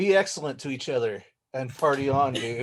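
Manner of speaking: usual speaking voice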